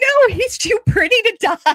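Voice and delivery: mock shrill, very high yell. Retelling own reaction while watching an episode: retelling yelling at the TV. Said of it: "I was yelling at the T V".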